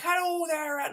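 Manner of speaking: put-on American accent with a very high voice. Telling the listener about an american chap on the phone: imitating an american accent. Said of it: "some American chap on the phone".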